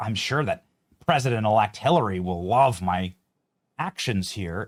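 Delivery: low, groveling, grotesque mock fawning voice. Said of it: "sort of groveling and grotesque".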